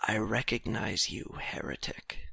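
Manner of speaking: very quiet, breathy, barely-there whisper. A narrator voices a small, diminished man leaning down to speak to you: whisper. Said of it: "and he whispers to you".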